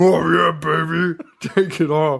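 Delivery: high, drawn-out, lewd egging-on catcall. Retelling what the guys in the tent said: imitating guys at a strip tent. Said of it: "they have to listen to these guys be like".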